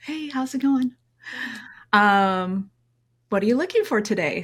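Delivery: very sweet, friendly AI voice, drawn-out um. Acting out the AI phone agent answering a buyer's call, friendly and sweet. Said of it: "answers the call in a very friendly, sweet voice".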